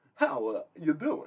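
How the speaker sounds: slow, breathy, poorly done voice. Saying a line the other speaker suggested: terrible Christopher Walken impression. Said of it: "That was a terrible Christopher Walken".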